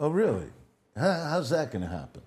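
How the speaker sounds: mock scoffing disbelief, said through laughter. Retelling a man's reply to him: retelling a laughing reply. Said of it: "he's laughing".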